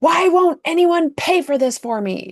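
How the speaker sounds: top-of-the-lungs shout, very high and shrill. Retelling a woman in a grocery store line, imitating her yelling. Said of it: "yelling at the top of her lungs".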